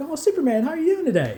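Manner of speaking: very high, fake-cheerful put-on delight. Retelling a Superman story where Superman confronts him at home; fake-cheerful Lex Luthor. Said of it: "acting all happy to see him".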